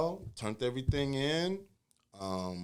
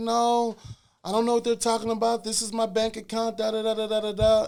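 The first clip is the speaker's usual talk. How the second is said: crying, upset, high, loud, tearful voice; 9 semitones higher, 6 dB louder than usual. Retelling her denial when confronted about the statements: imitating someone crying. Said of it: "she's crying".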